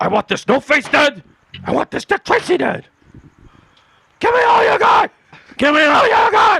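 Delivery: very high-pitched, loud, demanding tough-guy bark. Taking a turn at impressions, speaking in a Pacino impression. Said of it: "I'll do Pacino first, because I know I can do him".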